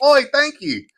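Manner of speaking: very high-pitched put-on Australian accent. Retelling what the man at the counter said: imitating a clerk's accent, sounds Australian. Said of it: "I always sound Australian when I do it".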